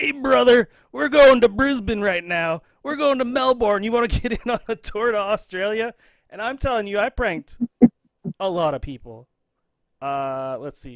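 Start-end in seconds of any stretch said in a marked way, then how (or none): 0.0-5.9 loud, pitched-up, booming wrestler promo voice. Retelling a prank call, using Hulk Hogan voice. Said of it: "my best Hulk Hogan voice".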